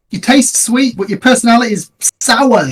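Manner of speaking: loud, high-pitched taunting shout. Casting a mocking insult at a dragon in a game: shouting at a dragon. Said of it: "I'm gonna shout at the dragon".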